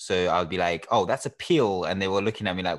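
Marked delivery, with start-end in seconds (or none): 0.9-1.8 loud, put-on attempt at an English accent. Retelling a childhood school answer, imitating own past English accent. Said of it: "but with an English accent".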